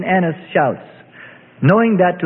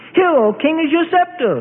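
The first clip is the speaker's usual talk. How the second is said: loud voice, pitched way up; 11 semitones higher than usual. A narrator reads a Herodian addressing the king: loudly. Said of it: "the puppet said loudly".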